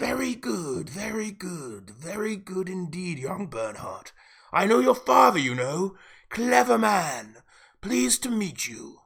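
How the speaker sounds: quiet, hushed whisper with a steely edge. Scrawny paymaster greeting young Bernhardt, quiet whisper with a steel edge. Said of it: "His quiet, whispering voice had a steel edge to it".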